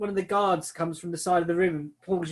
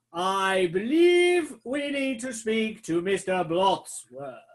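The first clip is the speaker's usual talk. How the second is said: big, priestly announcing voice; 2 semitones higher than usual. Playing a giant priest who magically booms his voice to the room: booming priest voice. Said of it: "booming his voice out".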